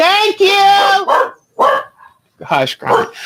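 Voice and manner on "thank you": shouted. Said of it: "I'm sorry I yelled".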